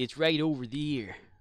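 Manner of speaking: put-on country American accent, stressing "there". Imitating a British man's early American speech: put-on country American accent. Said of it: "his American accent early on was like".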